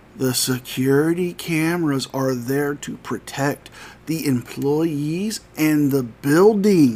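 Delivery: very slow, deliberate, spelled-out condescending delivery. Addressing frauditors, asking if they'll finally understand: really, really slow. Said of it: "if I speak really, really slow".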